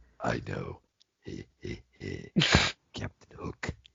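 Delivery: mock spooky villain whisper, very low, slow, creaky.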